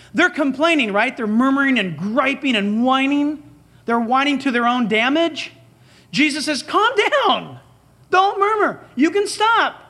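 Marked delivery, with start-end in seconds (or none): 6.6-9.7 high-pitched, heavily sarcastic tone. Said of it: "It's a sarcasm".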